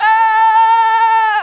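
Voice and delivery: very high scream, shouted as loud as possible.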